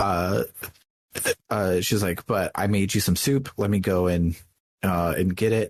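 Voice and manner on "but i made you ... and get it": plain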